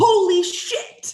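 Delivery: high, loud scream of sheer excitement. Reacting to a big college football win: screaming in excitement. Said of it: "'cause I'm screaming so loud".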